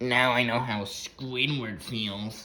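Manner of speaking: slow, drawn-out cartoon pirate voice. Speaker quotes SpongeBob, doing a Patchy the Pirate impression. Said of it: "That's my Patchy the Pirate impression".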